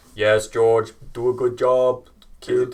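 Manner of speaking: booming voice, delivered slowly. Acting out what was said to George for a listener, do a Toto impression. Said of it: "Is that your Toto impression?".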